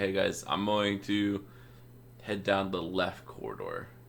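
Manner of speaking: slow, hushed whisper. A player's character sends a message cantrip to the group: whispering. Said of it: "I'm just going to whisper back".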